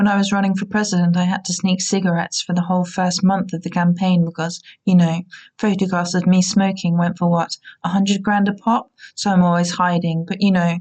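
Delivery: plain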